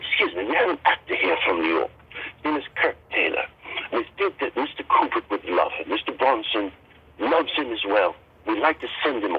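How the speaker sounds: put-on British accent, best effort. Retelling a phone call to a production company: imitating his own British accent. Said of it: "and I did a British accent".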